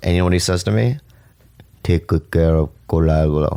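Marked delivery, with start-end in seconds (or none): 1.8-3.6 terrible put-on Filipino accent. Retelling what an uncle said at the hospital: bad Filipino accent as Uncle Carlo. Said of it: "That's the worst Filipino accent ever".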